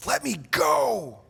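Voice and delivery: very high, desperate tone. Showing how the words sound read amid a late-night struggle: desperate struggling plea. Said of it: "we probably hear it in our minds like this".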